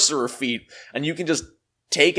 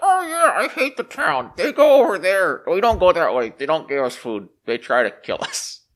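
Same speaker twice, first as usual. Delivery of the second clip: put-on mole creature character voice. Explaining a game feature, the speaker plays a mole answering someone who asks the way, in mole voice. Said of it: "Apparently that's my mole voice".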